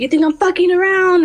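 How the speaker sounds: shrill, very high, furious yell. Retelling the neighbor shouting as he came closer: imitating a neighbor yelling louder. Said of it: "I heard him getting louder and louder".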